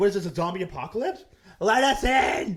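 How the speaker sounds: next-level furious outburst in a high voice. Retelling a friend banging on a locked door: imitating someone furious. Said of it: "legit, like, furious".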